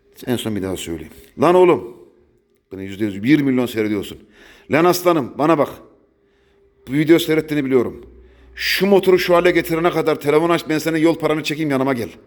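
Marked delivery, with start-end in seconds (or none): 1.4-12.0 furious, very angry rant. The speaker calls out one particular viewer of his videos, very angry. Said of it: "aslında çok kızgınım da".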